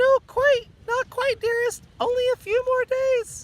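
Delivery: loud, piercing falsetto, very high. Narrating Grover calling out to a monster behind a boulder, high falsetto. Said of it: "He called out in falsetto".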